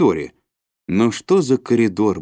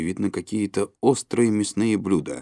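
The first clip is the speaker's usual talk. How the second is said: ordinary delivery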